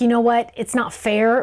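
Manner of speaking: usual speaking voice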